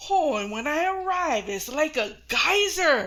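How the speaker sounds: put-on clumsy, awkward, embarrassed delivery. Retelling her dad telling her something embarrassing at dinner: imitating dad saying it awkwardly. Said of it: "he's all".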